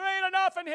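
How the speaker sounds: mock yelling, shrill, loud and very high-pitched. Saying everything has a voice, the speaker gives his wallet one, mock yelling as a wallet. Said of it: "You know your wallet's yelling at you".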